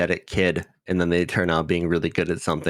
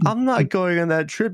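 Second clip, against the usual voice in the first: put-on flustered girl voice, higher pitch; 12 semitones higher than usual. Retelling a scene where Yui is invited on a trip: imitating Yui, flustered and red-faced. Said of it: "Yui just gets so red in the face".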